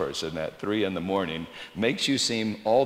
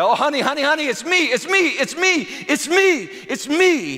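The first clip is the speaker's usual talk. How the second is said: very high, loud, drawn-out crying out; 8 dB louder than usual. Retelling how he called to his frightened bride: imitating crying out. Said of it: "I just cried".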